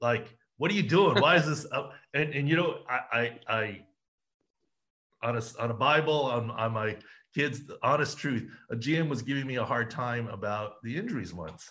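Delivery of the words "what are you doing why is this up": loud, raised yelling complaint. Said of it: "I've had G Ms yell at me".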